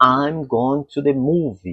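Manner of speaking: stress on I'm and on movie. English lesson on where sentence stress falls, stress on 'i'm' and 'movie'. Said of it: "a tônica vai ser no começo e no final".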